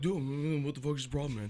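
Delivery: deep-voiced delivery. Retelling how the others react when the speaker gets mad: imitating a friend's reaction. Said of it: "you're all like".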